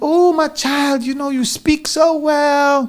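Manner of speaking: put-on drawn-out Zulu accent, old woman voice. Retelling what was said to them as a child, in a Zulu granny accent. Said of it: "this accent I'm giving you is like from my Zulu granny sides".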